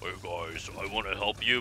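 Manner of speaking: comically deep voice, dropped way down, kept soft. Describing a game character, the speaker imitates him in a comically deep voice. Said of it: "he's got this comically deep voice. He's like".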